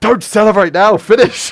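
very high, very loud, shrill, drawn-out yell. Retelling how the other speaker yelled to finish the job: imitating someone yelling. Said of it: "Like, yelling".

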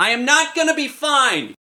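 piercing, very high, loud scream. Told he'll be fine, young Zeke answers back: Zeke screaming. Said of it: "As soon as the young Zeke screams".

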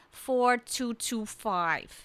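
put-on New England accent with a deep voice. Retelling a woman giving her social security digits: Roxanne Plast's deep New England accent. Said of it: "this deep New England accent".

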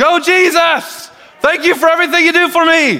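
put-on very high, loud, stadium-style cheering yell. Imagining church people cheering like at a ball game: imitating someone yelling praise. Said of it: "Why is he yelling that out?".

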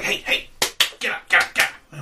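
goblin character voice. Voicing Krenko the goblin rousing his crony: goblin voice urging a crony. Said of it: "He's like".

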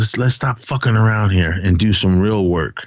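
ordinary talk

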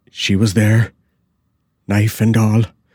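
gasped out, gasping. He answers the first footman on reaching the hall, gasping. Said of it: "he gasped out".

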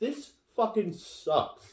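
mock disgust, slow and drawn-out.

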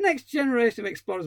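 scornful, mocking tone. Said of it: "my arse".

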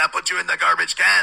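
imitated French Canadian accent. Recalling a man from the 70s and doing his voice: French Canadian accent. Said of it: "he had a voice like this. He was a French Canadian".

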